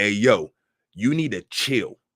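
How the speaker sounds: acted-out stern, strict fatherly voice. Retelling what was said to a spirit bothering a son: retelling talking like a stern father. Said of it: "I talked like a stern father".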